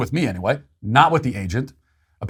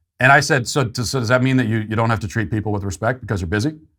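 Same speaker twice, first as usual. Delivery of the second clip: plain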